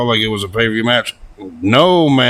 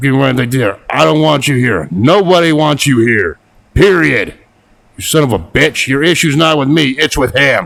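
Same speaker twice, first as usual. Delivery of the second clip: acted, heated, angry yelled rant; 4 semitones higher, 4 dB louder than usual. Retelling how Rollins yelled at Punk: imitating someone yelling. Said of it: "Rollins even yelled at him".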